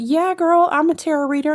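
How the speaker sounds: put-on high, loud, excited, gushing party girl voice. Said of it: "and somebody goes".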